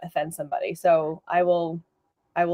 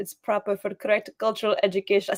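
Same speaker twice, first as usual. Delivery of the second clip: attempted put-on Russian accent; 3 semitones higher than usual. Speaker tries out an accent for the other speaker, in a Russian accent. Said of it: "we love the Russian accent".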